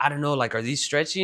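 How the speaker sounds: ordinary delivery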